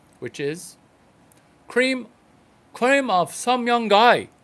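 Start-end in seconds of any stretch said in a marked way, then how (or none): 1.7-4.2 put-on Chinese accent on English, raised and pitched-up. Repeating a line the way it was first delivered: imitated Chinese accent. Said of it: "I'm going to do my best imitation of a Chinese guy".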